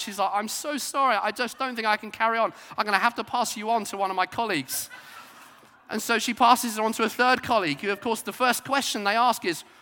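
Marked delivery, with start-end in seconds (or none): 0.3-4.9 put-on tearful weeping voice, higher. Retelling how a cashier apologized while weeping at the checkout: imitating a weeping cashier. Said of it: "starts crying and weeping at the checkout".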